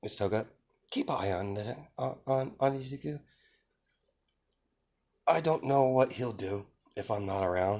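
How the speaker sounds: secretive, hushed stage half-whisper. Retelling a story scene where one character tells another: half-whispering. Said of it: "she whispers it".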